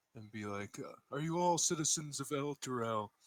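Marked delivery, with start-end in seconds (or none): 1.1-3.0 slightly raised, a little higher voice. A player character addressing people packed out in the hall; slightly raised voice. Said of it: "raise my voice a little bit".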